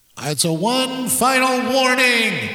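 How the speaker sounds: big booming voice, slow and rising. Mocking a warning just played in a clip: big boomy voice. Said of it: "can I get a big boomy voice on that".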